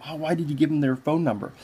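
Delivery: ordinary delivery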